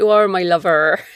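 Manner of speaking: put-on English West Country accent. Speaker living in Bath shows off the local accent, West Country accent. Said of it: "I'm beginning to pick up a West Country accent".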